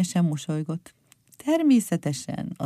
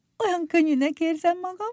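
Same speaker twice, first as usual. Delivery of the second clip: laughing through the words, very high pitch; 12 semitones higher than usual. One of the friends floating up out of the water speaks, laughing. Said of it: "nevetett Pircsi".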